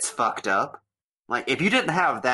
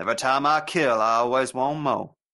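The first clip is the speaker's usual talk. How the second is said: put-on Southern accent. Imitating an actor doing Chucky in a Southern accent: Michael Moriarty Southern accent. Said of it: "He puts on the Southern accent like he's Mo".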